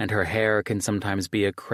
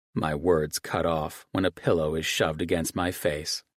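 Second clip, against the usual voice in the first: ordinary delivery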